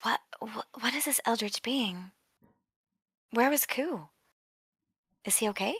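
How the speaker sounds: hushed whisper. Playing a character in a game, whispering questions to another character. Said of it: "Stars whispers to Dominic".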